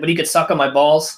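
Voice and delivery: ordinary talk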